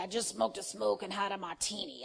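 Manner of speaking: put-on gravelly, creaky drunken-sounding voice. Retelling how a late evangelist used to talk: imitating Frances Hunter's voice. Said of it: "she had that voice, and she would just talk like".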